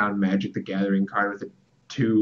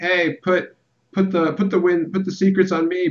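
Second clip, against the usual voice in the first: mock shrill screaming, very high; 9 semitones higher, 6 dB louder than usual. Voicing a card character as she pleads for the secrets: imitating someone screaming. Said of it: "she's just screaming like".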